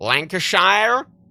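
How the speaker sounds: imitated American accent. Mimicking how Americans say English county names, in an imitated American accent. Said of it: "as the Americans say".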